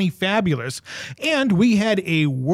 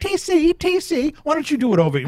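little put-on British voice, much higher and slower; 9 semitones higher than usual. Retelling first meeting Abby at a small Comic-Con, imitating Abby's little British voice. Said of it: "I hear this little British voice going".

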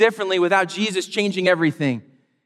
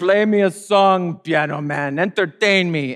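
odd, very slow, drawn-out vampire-ish voice. Retelling someone's impression of entitled front-row concertgoers: imitating a weird vampire-like voice. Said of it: "he did this impression".

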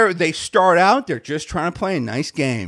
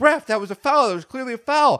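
mock shrill, high-pitched screaming; 6 semitones higher than usual. Retelling shouting at a referee over a missed foul: imitating own screaming. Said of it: "so I start screaming that too".

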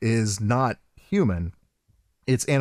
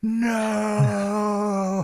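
high, crying, anguished yell. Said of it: "Sonya yelling".

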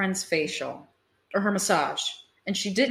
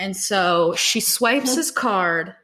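ordinary delivery

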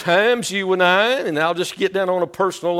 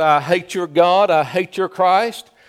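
ordinary talk, nothing marked

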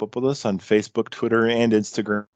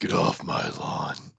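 slow, breathy, barely voiced near-whisper; 6 dB quieter than usual. Joking about being old, yelling at kids: Clint Eastwood voice. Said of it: "I do it more like Clint Eastwood from, uh, Gran Torino".

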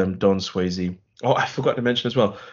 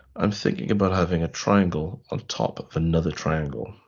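low, secretive, conspiratorial confiding tone; 6 semitones lower than usual. Retelling a man's words to the guy at the tattoo desk, mock-conspiratorial. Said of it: "conspiratorially looks around and says".

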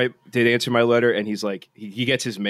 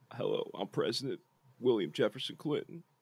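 hushed, soft presidential voice with vocal fry; 12 dB quieter than usual. Introducing an impression of a former president: Bill Clinton impression. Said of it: "I could do this one pretty decently".

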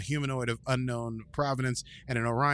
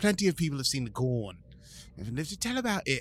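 hammy, bad fake British accent with sing-song tune. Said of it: "I love your British accent".

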